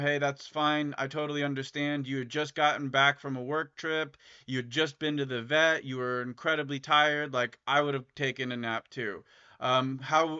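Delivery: ordinary talk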